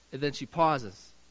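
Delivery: plain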